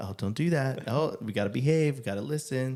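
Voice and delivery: mock voice as if for children. Retelling how they talk to children all day: imitating talking to children. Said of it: "locked in with the children all day".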